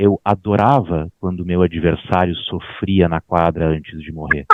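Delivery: gentle slow calm tone.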